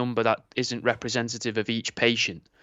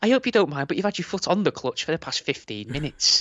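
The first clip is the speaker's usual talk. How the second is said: put-on overly polite car voice, higher pitch; 6 semitones higher than usual. Imitating a car's voice telling off the driver: mock overly polite car voice. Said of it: "ours would be far too polite".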